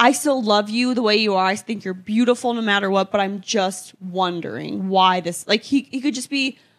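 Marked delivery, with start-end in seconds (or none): none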